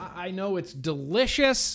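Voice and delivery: emphatic, half-yelled, mild yell. Reviewer tasting a vape flavor on camera, yelling. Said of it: "I'm sorry for yelling".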